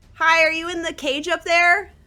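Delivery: very loud, very high-pitched yell. Calling up to someone in a cage from the ground: shouting really loud. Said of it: "I'm gonna shout really loud".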